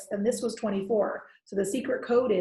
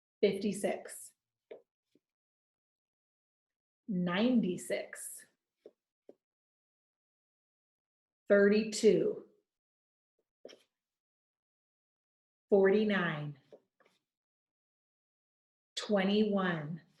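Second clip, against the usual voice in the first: slower pace, much quieter. Calling out multiplication flashcard answers for viewers, slower pace. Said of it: "this will be a little bit slower".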